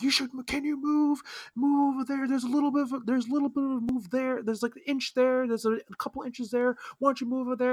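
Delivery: very high, shrill, demanding yelling rant. Retelling how a lady on a packed train started: imitating someone yelling. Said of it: "just start yelling at me".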